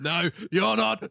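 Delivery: loud, high, big burly man voice. Imagining a big burly man throwing the speaker out: imitating a big burly man. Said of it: "a big burly man comes and grabs me".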